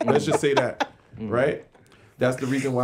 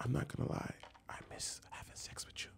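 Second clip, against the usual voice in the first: whispered voice; 20 dB quieter than usual. Retelling what she said in the car, imitating a whisper. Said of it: "just like that, whisper".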